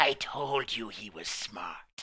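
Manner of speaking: put-on voice of an old witch. Storyteller voicing the old witch in the story, old witch voice. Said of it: "The old witch goes".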